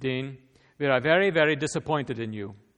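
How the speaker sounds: loud, put-on Hungarian accent. Speaker quotes a man addressing him, Dean, in a Hungarian accent. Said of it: "he began in his Hungarian accent".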